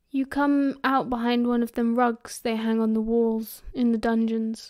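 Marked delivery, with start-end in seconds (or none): none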